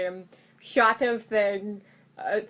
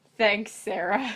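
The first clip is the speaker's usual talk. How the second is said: ironic, insincere, sarcastic tone. Thanking another viewer after a commercial starts playing: sarcastic thanks. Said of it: "That was sarcasm".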